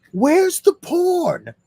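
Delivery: play-acted, very high, shrill, loud wild scream, porn drawn out. Retelling a clip of an old man at a truck: imitating someone screaming. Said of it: "and he was screaming".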